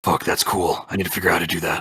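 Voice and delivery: low mutter, private aside. Narrator voicing a character who sees skeletal wings come out of Bass, muttered under breath. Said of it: "under his breath".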